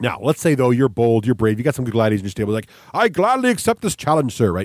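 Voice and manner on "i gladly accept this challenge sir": grandiose arena-host announcer voice, pitched up. Explaining a board game, acting a player accepting the host's challenge: grand host's voice. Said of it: "In that same voice, you gotta do that".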